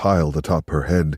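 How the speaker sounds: ordinary delivery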